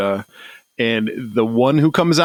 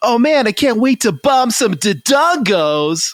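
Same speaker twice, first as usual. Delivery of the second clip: corny cartoon hero voice, pitched way up; 12 semitones higher, 3 dB louder than usual. Criticizing other voices, quoting one as an example: corny Link voice. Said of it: "or corny, like like Link is".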